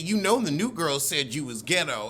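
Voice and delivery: ordinary delivery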